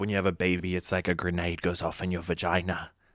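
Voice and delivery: mimicked, put-on fake British accent. Retelling what a sixty-year-old woman said: imitating a fake british accent. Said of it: "fake British accent when she gets upset".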